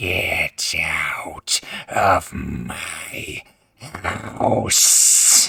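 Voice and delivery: low, rough, creaky, rasping hag voice. A game master voices a hag gripping a player's throat, in a raspy hag voice. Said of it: "She rasps into your face".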